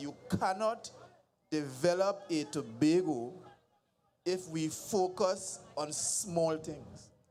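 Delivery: slow, measured, deliberate, word-by-word emphasis. Addressing Tobagonians about development, speaking slowly. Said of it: "I want to say this slowly".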